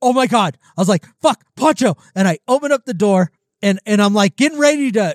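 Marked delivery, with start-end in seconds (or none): 0.0-2.0 acted-out panicked, frightened tone. Recounting finding the animal lying in his cage: retelling being scared. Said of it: "I got so scared".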